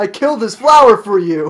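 loud shouted words. Voicing a game character's greeting after being told to shout: shouting a greeting. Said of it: "Greet by shouting!".

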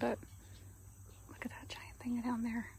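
hushed, soft whisper. Exploring without a tour guide, speaker shows viewers something below, whispering. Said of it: "I don't know why I'm whispering".

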